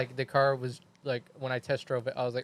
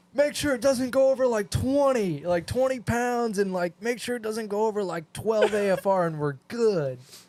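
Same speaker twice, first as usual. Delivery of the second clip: mock high-pitched yelling; 8 semitones higher, 4 dB louder than usual. Retelling what was shouted to him in a loud car: imitating own yelling. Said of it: "I'm yelling at him".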